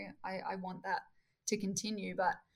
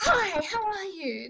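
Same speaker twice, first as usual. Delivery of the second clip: very high, loud, drawn-out, over-the-top delivery; 11 semitones higher, 8 dB louder than usual. Recalling meeting a guy on a beach walk, mimicking his loud, out-there greeting. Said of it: "he was very, ... this guy's very out there and loud".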